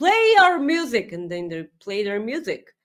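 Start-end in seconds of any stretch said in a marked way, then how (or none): 0.0-1.1 acted-out, high-pitched, demanding yelling. Recounting a wrestling show where someone yells backstage on the microphone: retelling a yell. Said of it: "yells at people backstage".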